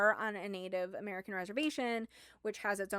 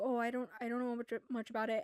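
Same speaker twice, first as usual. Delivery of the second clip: put-on stammering speech; 2 semitones higher than usual. Retelling a character answering which tribe he is from, imitating a stammer. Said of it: "Ben kinda stammers".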